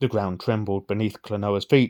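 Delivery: ordinary talk, nothing marked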